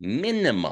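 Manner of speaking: heavy stress leaned on minimum. Doing backwards math on monthly bills, stressing 'minimum'. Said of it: "I'm going to stress this word".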